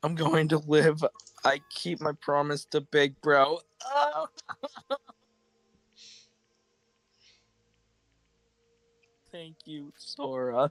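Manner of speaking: crying and tearful through the words. Reading lines aloud right after a sad scene, crying while talking. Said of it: "I'm crying".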